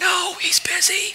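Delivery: put-on very high, hushed little-child half-whisper. Telling a joke, voice the child answering the boss, in a child's half-whisper. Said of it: "whispered the child".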